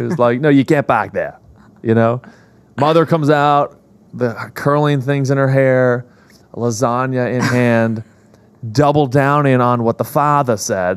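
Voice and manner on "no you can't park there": put-on Boston accent, faster. Retelling a father's reply about parking, in a boston accent impression. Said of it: "in the most Boston way ever".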